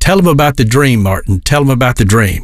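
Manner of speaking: plain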